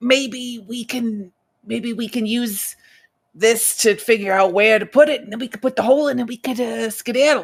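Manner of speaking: hushed whisper in a character voice. Playing a character suggesting an escape plan: whispering in character voice. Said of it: "and this is whispering".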